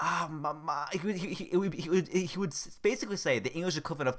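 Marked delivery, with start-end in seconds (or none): 0.0-0.9 play-acted, whiny, childish voice. Retelling how a roommate talked to his mom: imitating a whiny voice. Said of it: "it was so whiny".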